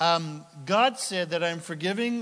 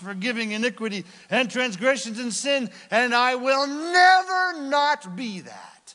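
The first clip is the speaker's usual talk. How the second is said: loud, slow, deliberate shout, "never" stretched out; 6 semitones higher, 5 dB louder than usual. Speaking to an audience, shouting. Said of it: "Sorry for shouting".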